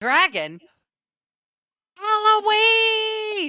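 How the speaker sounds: very high, choked, freaked-out giant shriek. Game master voicing a giant heard from off, choked, angry, freaked-out giant. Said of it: "in a, a choked, angry, freaked out voice".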